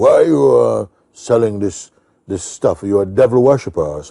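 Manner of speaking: strong, loud, forceful, commanding voice. Retelling what an elderly man on the street asked him, retelling in a very strong voice. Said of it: "in a very strong voice".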